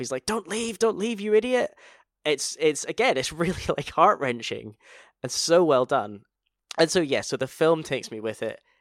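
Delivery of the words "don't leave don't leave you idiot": put-on, very high, desperate scream. Describing a film character desperate to make it work, retelling a scream at himself. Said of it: "he's screaming at himself".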